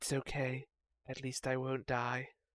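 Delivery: very quiet, hushed, soft half-whisper. Voicing a character who answers a half-whispered insult: half-whispering back. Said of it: "you hear a whisper back".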